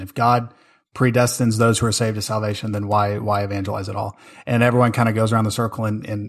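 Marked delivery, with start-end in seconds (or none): none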